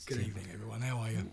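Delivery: rough, croaky voice. Greeting everyone on arrival with a rough, hoarse voice. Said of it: "It sounds really rough, doesn't it?".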